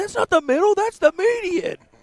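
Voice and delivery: very high, shrill, teasing mocking voice. Imitating the other speaker's earlier remark about the road. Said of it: "That's not how I sound".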